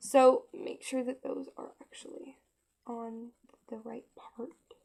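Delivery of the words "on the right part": soft, hushed whisper. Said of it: "I know I'm whispering".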